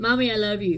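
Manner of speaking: ordinary talk, nothing marked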